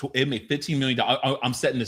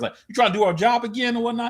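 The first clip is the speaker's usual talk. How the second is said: put-on New York accent, pitched way up; 10 semitones higher than usual. Retelling a scene, quoting a character's line: new york accent. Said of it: "she hits him with a New York".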